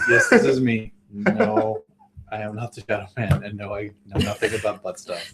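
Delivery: flat, somber, low, quiet, no-nonsense deadpan. Speaker shows how another person would say a line if deadpanned; deadpan. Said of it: "I would love if he deadpanned it".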